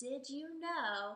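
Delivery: ordinary delivery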